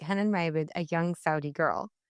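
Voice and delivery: ordinary talk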